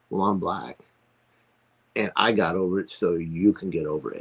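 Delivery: plain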